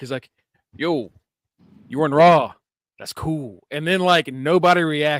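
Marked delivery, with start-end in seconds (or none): 0.7-3.6 acted cool-guy wrestler voice, played too cool. Retelling a wrestling segment, imitating Carlito's cool accent: Carlito cool accent. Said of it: "Carlito cool shit".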